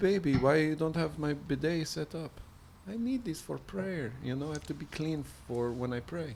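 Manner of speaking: very quiet, gentle, hushed, soft-spoken voice. Retelling a man on a show asking for his bidet: imitating a soft-spoken man. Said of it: "very soft-spoken".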